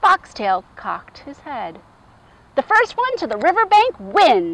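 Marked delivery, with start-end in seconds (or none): 2.6-4.5 high-pitched crying out, calling forward. Accepting a challenge to race, a character cries out. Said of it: "he cried".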